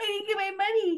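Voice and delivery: high, put-on sugar baby whine. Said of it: "Like the crying".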